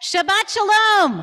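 very loud, high, excited voice. Trying the greeting again after asking everyone to be louder, a louder greeting. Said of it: "we need to be a little bit louder here".

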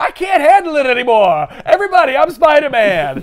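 high-pitched, goofy, put-on comic character voice. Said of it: "he goes".

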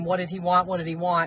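plain

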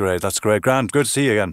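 casual put-on Southern Irish accent. Showing how the speaker talks when in southern ireland, southern irish accent. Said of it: "if I was in Southern Ireland, I would be a little bit more like that".

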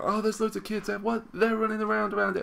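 mock screaming outburst, high-pitched. Retelling what a video maker said about kids: imitating someone screaming. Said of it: "he was screaming".

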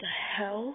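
low murmur. Sketch hears shuffling and giggling down the stairs, murmured. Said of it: "Sketch murmured".

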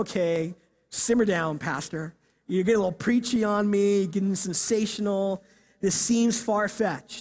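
usual speaking voice

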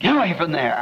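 normal talking voice

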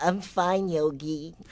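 animated cartoon bear sidekick character voice. Asked for a line, the speaker answers Yogi in Boo Boo voice. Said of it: "Give me a line".

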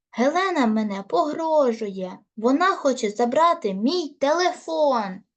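loud yelling, shouting. Fiona calls to her mother after the door bursts open, shouted. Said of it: "закричала [name]".

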